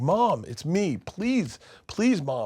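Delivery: tearful, high, slow voice through sobs. Retelling a story where a man begs his mom, imitating someone crying. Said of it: "And he's crying".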